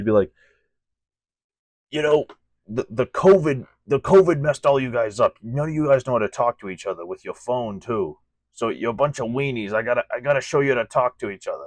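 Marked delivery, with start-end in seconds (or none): 1.9-11.7 loud, pitched-up scolding professor voice. Showing listeners what a man from your school sounded like, do an impression of him. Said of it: "my impression of him".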